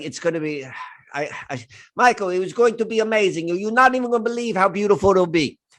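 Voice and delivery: put-on French-accented voice. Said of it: "That's the kind of how she talks".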